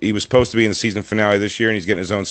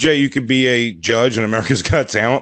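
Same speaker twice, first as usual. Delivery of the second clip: ordinary talk, nothing marked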